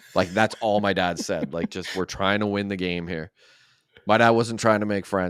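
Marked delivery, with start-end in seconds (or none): none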